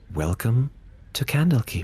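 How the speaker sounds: smooth, serene, calm, mellifluous elf voice. Voicing an elf who greets the party: calm, mellifluous voice. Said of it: "in a calm, mellifluous voice says".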